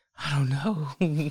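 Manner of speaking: slow, loud, feigned innocent tone.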